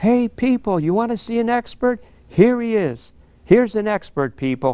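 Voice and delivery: loud, high shout carrying across a room. Retelling how a man leaning on the counter shouted to the room: retelling a loud shout. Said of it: "he shouts out in a loud voice".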